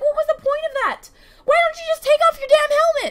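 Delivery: high, cracking voice, frustrated and ranting. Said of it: "my voice is, like, starting to crack 'cause it's so frustrating".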